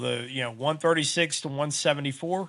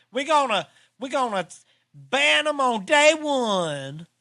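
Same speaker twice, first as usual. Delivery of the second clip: exaggerated twang, very high, one sound stretched out; 10 semitones higher, 4 dB louder than usual. Quoting a day-one ban pledge, doing a Kamala impression with twang. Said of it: "I gotta say it with a real twang if I'm doing Kamala".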